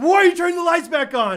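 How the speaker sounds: very high, loud, visibly mad, angry yell. Retelling how a visibly mad man reacted to the lights coming back on, imitating someone yelling. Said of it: "Like he was like yelling".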